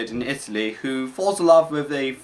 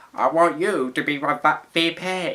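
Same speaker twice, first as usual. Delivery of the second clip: bad, very slow, laid-on Texan accent. Talking about a movie trailer, doing a bad Texan Bush impression. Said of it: "I kind of like his Texan accent".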